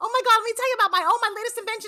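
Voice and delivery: put-on girl's voice, pitched very high. Imitating a girl whose voice is too high: high-pitched girl's voice. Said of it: "a girl who said like this".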